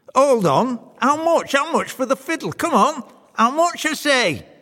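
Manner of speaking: very high, loud, insistent clamouring voice. A soldier leaps up to claim his fiddle from the devil, clamouring. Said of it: "clamours to make his claim".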